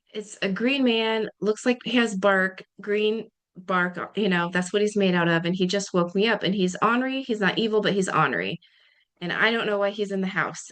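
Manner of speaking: ordinary talk, nothing marked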